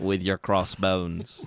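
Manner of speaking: put-on speech shifting into Australian accent. Joking about a pirate show, speaker slips into an Australian accent. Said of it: "I don't know why I got Australian there".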